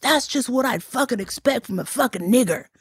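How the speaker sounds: sudden half-yelled outburst. Retelling how a panhandler turned and yelled at him: imitating a man yelling. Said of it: "And he starts yelling".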